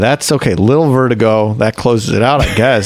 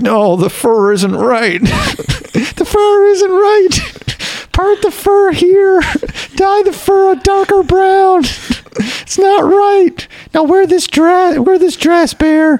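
put-on baby voice, much higher pitch. Describing a man making demands about his teddy bear: baby voice. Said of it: "This is a stunningly accurate baby voice".

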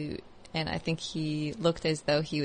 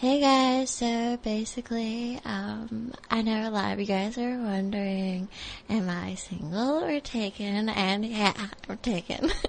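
high, put-on junior-high girl vlogger-style voice; 6 semitones higher than usual. Asked to keep talking in the voice, doing a junior-high girl voice. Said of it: "talk in that".

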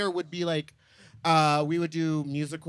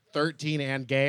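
usual speaking voice

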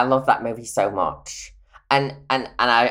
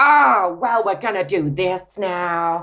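celebrity-style impression, pitched much higher; 8 semitones higher than usual. Recalling a time the voice was constant, the speaker does a Jennifer Coolidge voice. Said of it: "all my voice was literally constantly".

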